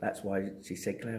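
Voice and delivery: ordinary delivery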